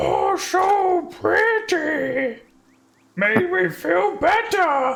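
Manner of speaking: put-on childlike giant voice, very high and very slow. Voicing a giant calmed by a circling bird, babyish giant voice. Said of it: "he's like a baby with a mobile".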